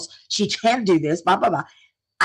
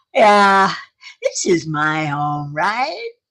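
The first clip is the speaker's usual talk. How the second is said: mock drunken speech; 2 semitones lower than usual. Retelling what a mother said while carrying her to bed: imitating drunken speech. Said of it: "rather drunkenly".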